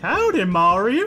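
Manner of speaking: Southern cartoon character voice. Imitating the old Toad voice from Mario Kart: Southern Toad voice. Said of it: "the Nintendo sixty-four Toad voice where he's, like, Southern".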